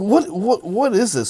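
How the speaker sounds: very high, shrill, loud, scary yell. Retelling how a teacher yelled at a student over an article: imitating a teacher yelling. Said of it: "yelling at him".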